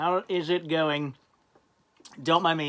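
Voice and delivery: talking while chewing. Greeting viewers at the start of a video, chewing candy while talking. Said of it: "I'm just chewing on a Jolly Rancher".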